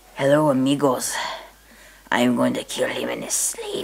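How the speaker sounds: very low ventriloquist puppet voice. Performing a puppet act for an audience, in the Pirate Pete puppet voice. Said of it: "I have a puppet named [name]. ... Hello, amigos".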